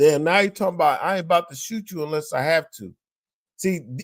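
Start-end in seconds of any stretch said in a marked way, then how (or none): none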